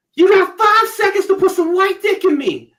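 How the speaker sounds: put-on swooping, shrill, very loud drunken shriek. Retelling what a drunk woman screamed: imitating a drunk woman screaming.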